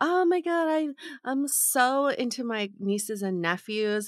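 showy, light, performative flirty gush, acted out. Imitating early-date conversation about nieces and nephews: mock-flirty performative tone. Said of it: "flirty and kind of performative".

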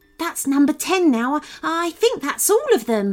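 gasping out the words. Narrator reads an exhausted rescuer after digging people out of snow, gasped. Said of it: "Hamish gasped".

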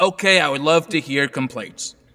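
usual speaking voice

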